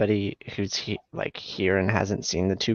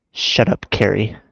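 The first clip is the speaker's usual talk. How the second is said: emotional, louder, not yelled; 7 dB louder than usual. Asked to say the line to the camera and mean it, with emotion, not yelling. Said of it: "It's like with emotion".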